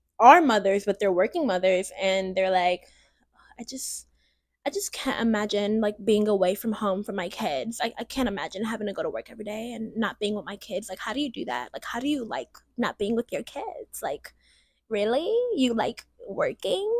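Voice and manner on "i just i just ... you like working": soft, hushed, mocking voice, sneering and judgmental. Speaker imitates mothers shaming working mothers, in the speaker's Pygmisha voice. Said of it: "that's my Pygmisha voice".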